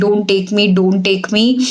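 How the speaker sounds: normal talking voice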